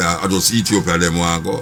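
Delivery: normal talking voice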